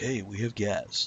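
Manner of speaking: smooth, sultry, sexy late-night radio host voice. Speaker puts on a voice to make an announcement: sexy radio voice. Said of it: "You hear me put it on my sexy radio voice?".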